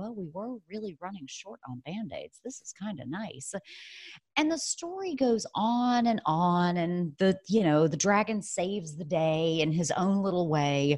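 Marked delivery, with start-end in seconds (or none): 0.0-3.5 very quiet muttered aside under the breath. Retelling a story where the nurse reacts to the dragon's band-aids, imitating a muttering nurse. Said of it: "the nurse under her breath is like".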